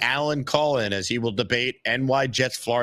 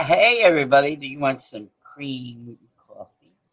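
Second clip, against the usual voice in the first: put-on sexy, seductive voice; 3 dB louder than usual. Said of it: "Bobby, take it away".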